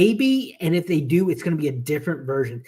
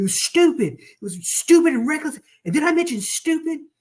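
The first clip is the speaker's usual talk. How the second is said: very high, shrieking, climbing scream; 11 semitones higher than usual. Retelling a scene where a character screams at Nick Fury: imitating someone screaming. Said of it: "he's screaming".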